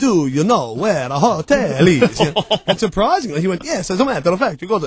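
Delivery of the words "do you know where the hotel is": slow, fake Italian accent. Retelling a woman asking where the hotel is, in put-on Italian accent. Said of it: "she actually spoke in what she thought was an Italian accent".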